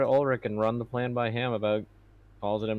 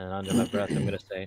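plain

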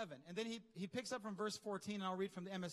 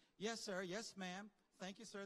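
put-on Southern drawl accent. Retelling how the group started talking like a Southern intern: imitating a Southern accent. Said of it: "start talking like this dude from the South".

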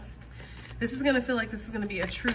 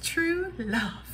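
high-pitched storybook fairy-tale princess voice; 8 semitones higher than usual. Tarot reader announcing the first card drawn, in a Disney princess voice. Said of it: "In my Disney princess voice".

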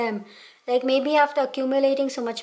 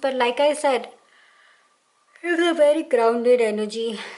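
speaking through a yawn mid-sentence. Tarot reader continuing a reading late at night, yawning while talking. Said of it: "Sorry, I yawned".

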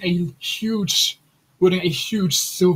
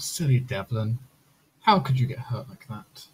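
eerie, ghostly, very low feminine voice; 7 semitones lower, 6 dB quieter than usual. A voice calls out to the hurt Devlin: eerie feminine voice. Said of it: "a feminine voice calls out eerily".

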